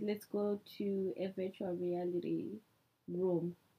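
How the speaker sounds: low, slow, glum, disappointed voice. Retelling what a younger man told them, in a mock-disappointed low voice. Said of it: "Your v- voice went so low".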